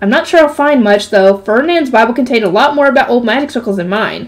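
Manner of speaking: ordinary delivery, nothing marked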